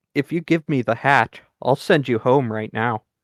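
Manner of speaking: persuasive, coaxing, confidential stage whisper. Half-whispering to Barnaby in character, offering a deal: persuasive half-whisper. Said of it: "whisper to Barnaby as persuasively as I can".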